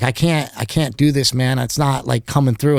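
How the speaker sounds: usual speaking voice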